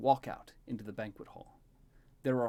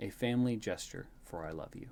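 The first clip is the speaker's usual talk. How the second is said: plain reading voice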